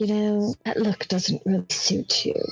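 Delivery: confiding, voiced stage whisper in character. Playing a character who leans over and half-whispers to Talus: half-whispering in character. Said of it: "lean over and whisper to Talus".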